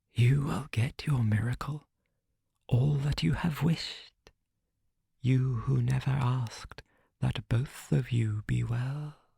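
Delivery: words hissed in a monster voice. A narrator recounts the words the thing hissed as it left: hissing. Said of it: "it hissed the words".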